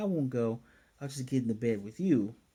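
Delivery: ordinary talk, nothing marked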